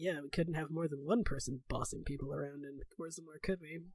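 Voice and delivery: muttered under breath. Voicing a character's remark as an aside, muttered under his breath. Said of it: "And Ren under his breath".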